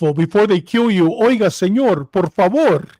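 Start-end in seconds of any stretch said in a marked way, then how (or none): 1.1-2.8 slow, courteous, respectful put-on Bogotá Spanish accent. Speaker contrasts how Spanish is spoken in different cities, imitating polite Bogotá Spanish. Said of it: "Bogota speaks it very respectful".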